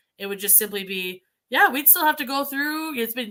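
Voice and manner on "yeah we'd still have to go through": upbeat, positive, pitched-up tone. Keeping the same words and changing only the way it's said, positive tone. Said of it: "how we could po- make that positive".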